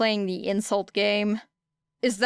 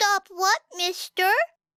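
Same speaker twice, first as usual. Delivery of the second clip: put-on very high, grating, small child voice; 11 semitones higher than usual. Narrator reads a woman mimicking a small child back at a man; high, grating small-child imitation. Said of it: "She pitched her voice even higher".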